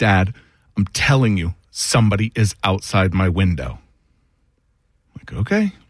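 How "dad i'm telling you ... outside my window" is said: frightened, urgent, panicked pleading tone. A father retells his daughter flinging her door open, imitating her panicked voice. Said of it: "she's got a panic in her voice".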